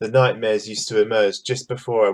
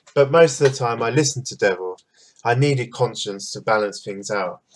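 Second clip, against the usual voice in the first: ordinary talk, nothing marked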